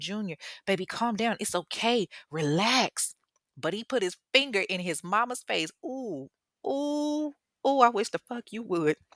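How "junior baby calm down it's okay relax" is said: play-acted, desperate, soothing, begging pleading tone. Retelling how a scared mother calmed her son: imitating someone begging and pleading. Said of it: "she's begging and pleading with him".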